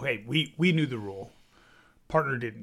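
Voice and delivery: ordinary talk, nothing marked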